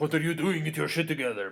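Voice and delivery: clumsy fake Russian accent, loud and high. Retelling what a man said to some Cuban boys, in a bad Russian accent. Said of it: "That sounded really Russian".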